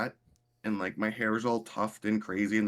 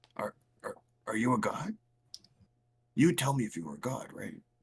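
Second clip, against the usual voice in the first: close-in, voiced, half-whispered stage whisper. Asking a pet in character whether it is a god: half-whispering. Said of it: "whisper to him".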